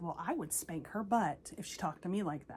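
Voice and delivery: ordinary talk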